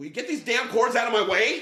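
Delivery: screaming voice pitched very high. Retell how she came out while you were laying cords, imitating someone screaming. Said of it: "And she screams".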